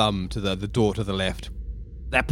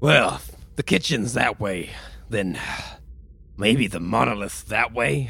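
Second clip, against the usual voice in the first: cool, relaxed, laid-back space pirate swagger. Player voices a space pirate character suggesting which way to go: cool space pirate voice. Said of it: "a space pirate who gets dragged into weird things with weird people and enjoys a great birthday. / a space pirate who gets dragged into weird things with weird people and enjoys a great birthday. / He".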